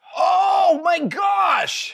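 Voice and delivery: very high, loud, thrilled, excited shriek. Finding the button on a helmet piece, excited yelling. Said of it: "Sorry, I keep yelling".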